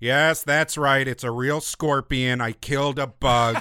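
mock serious, aloof, detached put-on voice. Retelling a director's commentary about a real scorpion: imitating a serious aloof voice. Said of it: "very serious but, like, weirdly aloof voice".

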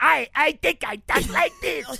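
put-on high-pitched big baby voice. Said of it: "or would you have baby head talk?".

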